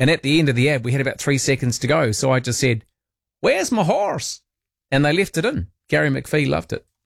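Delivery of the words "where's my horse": very high, put-on yeehaw cowboy American accent. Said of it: "I had to talk like an American".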